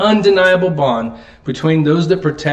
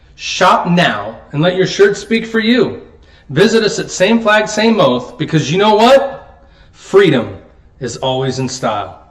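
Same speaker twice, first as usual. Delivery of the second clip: mad, angry, heated tone. Reading a t-shirt commercial aloud: angry. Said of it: "Why do you sound so angry in your commercial?".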